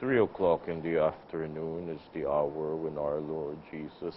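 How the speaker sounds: slow, drowsy, half-awake sleepy voice. Imitating a man leading the three o'clock prayer: imitating a sleepy voice. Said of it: "he has this sleepy voice".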